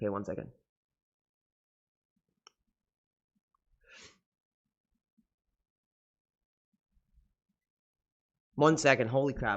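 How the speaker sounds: choking up, voice close to tears. Pausing mid-story, overcome and fighting back tears: choking up, about to cry. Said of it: "I'm gonna tear up".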